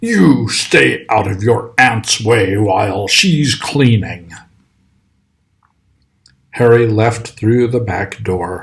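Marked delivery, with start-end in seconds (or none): 0.0-4.3 bossy, snarling voice. Reading a novel aloud, a man snarls an order at Harry; snarling. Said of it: "he snarled at Harry".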